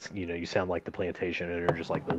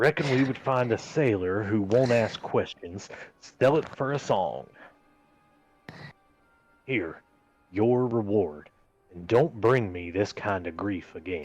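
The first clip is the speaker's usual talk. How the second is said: put-on frontier-style drawl in an old-timey Western accent; 2 semitones higher than usual. Voicing a boss character paying an underling: old-timey Western accent. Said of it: "like he's from Little House on the Prairie".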